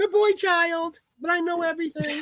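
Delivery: very high, squeaky chipmunk voice. Friends joking around; one does a high, chipmunk-like Aiden impression. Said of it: "Aiden impression?".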